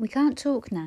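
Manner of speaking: ordinary delivery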